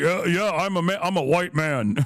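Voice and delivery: coarse disguised voice, put on. Telling someone to disguise her voice, then demonstrating in a put-on coarse voice. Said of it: "just make your voice uh, more coarse".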